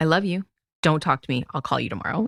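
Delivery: angry, mad-sounding delivery. Retelling cutting short a phone call during the move: retelling own angry reply. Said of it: "because I was so mad".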